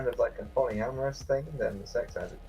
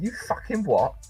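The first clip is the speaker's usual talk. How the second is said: rough, colloquial, coarse British accent, pitched up; 5 semitones higher than usual. Demonstrating how to open a more coarse british voice: coarse colloquial british accent. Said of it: "more colloquial and coarse British".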